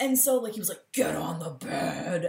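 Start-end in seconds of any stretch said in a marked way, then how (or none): 0.9-2.3 gruff, deep, slow put-on wrestler growl. Retelling what he said in the bedroom, in a WWE wrestler voice. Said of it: "talking in a voice like this, like a WWE wrestler".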